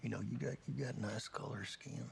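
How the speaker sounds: put-on soft low Southern accent.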